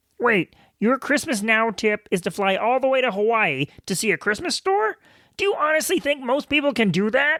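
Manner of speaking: cartoon frog puppet character voice. Voicing an imaginary listener's objection to the tip, Kermit the Frog voice. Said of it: "Sounds kind of like Kermit the Frog".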